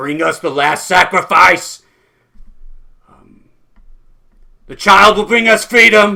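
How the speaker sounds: piercing, shrill, very loud, demanding rising scream. Narrating to two players, the speaker voices a voice in the warehouse, screaming. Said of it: "this voice screaming".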